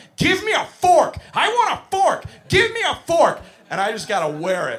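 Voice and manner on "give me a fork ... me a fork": put-on high, loud screaming like a three-year-old. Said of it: "I'm being screamed at point blank".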